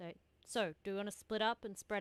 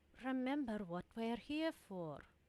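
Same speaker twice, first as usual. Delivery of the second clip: whispered, in character; 2 semitones higher than usual. Speaking in character, reminding a companion of their purpose: whispering in character. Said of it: "and just whisper in his ear".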